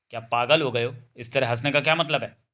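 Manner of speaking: plain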